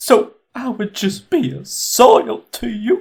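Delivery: acting close to tears. Voicing a woman hurt by an elf's remark, acting as if about to cry. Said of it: "as if she's about to cry".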